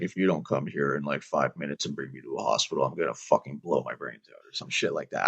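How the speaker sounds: dead flat monotone, very low and very quiet. Recounting calling the cops on himself during stress-induced psychosis, retelling in a monotone. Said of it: "in a monotone voice".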